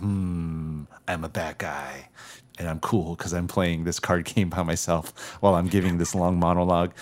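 hushed, cartoonish bad-guy voice with drawn-out "I'm". Describing a movie villain's monologue, mimicking him in a villain voice. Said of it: "I love your villain voice".

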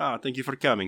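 put-on Italian accent. Friend acts out greeting people with cheek kisses, in a fake italian accent. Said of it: "You keep using like an Italian accent".

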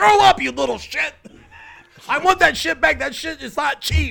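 high, loud, mock furious yell.

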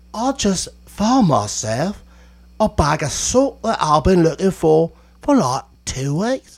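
fake English accent. Mocking a kind of english speaker, in a put-on english accent. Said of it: "the idiot English English accent where, like, you know, they just don't know what they're talking about, like this".

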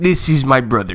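put-on Russian accent. Riffing on how fun Russian accents are, speaker introduces a brother: Russian accent. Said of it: "Russian accents are so underrated fun".

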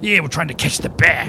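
rough, heavy thug or trapper character voice. Voicing one of two dirty-looking guys jumping out at the party: voicing a dirty-looking heavy-set thug. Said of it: "these two kinda heavy-set, dirty-looking guys jump out".

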